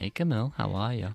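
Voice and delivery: seductive, quiet. A producer greets the host at the start of their show, sultry. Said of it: "That sounded so sultry".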